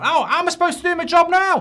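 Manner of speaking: frantic, very high and loud panicked outburst. Thinking he will lose his job, the speaker talks to Gary, panicking. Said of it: "I'm panicking".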